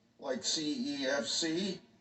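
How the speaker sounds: usual speaking voice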